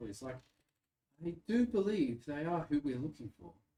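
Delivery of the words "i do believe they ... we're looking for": gently spoken, unforced, somewhat raised voice. Voicing a robed man reporting to a lady: speaking very softly. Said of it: "is speaking very softly".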